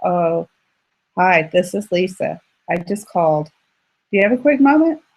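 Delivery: low, dull, bored, unexcited voice. Showing how not to sound when booking by phone: flat unexcited phone call. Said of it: "you don't wanna sound like".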